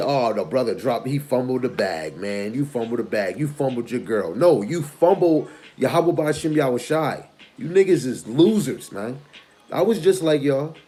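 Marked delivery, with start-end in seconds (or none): none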